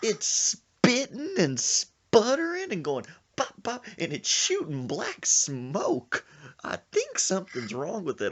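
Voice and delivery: put-on scared, very high, swooping country accent. Retelling what a scared bike passenger said: imitating Sir Isaac's country accent. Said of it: "He's talking in that country accent".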